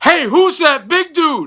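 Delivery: yelling in a very high voice. Retelling how a friend stood on a bar stool: imitating someone yelling. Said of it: "and he would yell".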